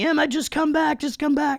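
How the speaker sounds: put-on scream, very high-pitched screaming call. Recalling losing sight of her swimming, the speaker retells calling out: retelling a scream. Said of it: "I'm just screaming and screaming".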